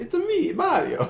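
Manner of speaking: silly, very high cartoon Italian accent. Mid-conversation about Canada, the speaker suddenly does a Mario voice. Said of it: "don't know why my voice went there".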